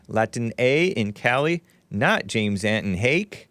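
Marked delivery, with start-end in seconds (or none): none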